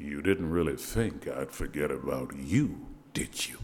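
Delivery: very low, dropped-down voice.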